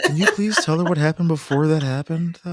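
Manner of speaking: put-on almost-whisper. Recapping what a beaten-down man asked: retelling an almost-whisper. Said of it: "He almost whispered it".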